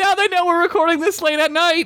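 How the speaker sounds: put-on outraged tone.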